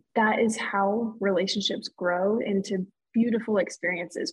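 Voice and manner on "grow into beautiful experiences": ordinary talk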